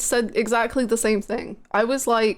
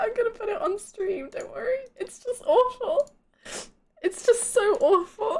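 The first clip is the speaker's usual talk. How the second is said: very high-pitched, crying with laughter; 10 semitones higher, 3 dB quieter than usual. Apologizing to viewers while trying to explain an awful image: laughing so hard while talking. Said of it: "I'm crying".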